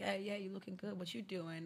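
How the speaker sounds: flirty, laid-on-thick pickup-line patter. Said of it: "He's like".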